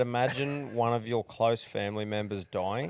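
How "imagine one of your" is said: ordinary delivery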